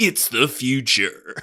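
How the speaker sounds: loud, big nineties movie-trailer announcer voice. Describing a movie's opening line, imitating the nineties trailer voice guy. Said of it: "doing the trailer voice".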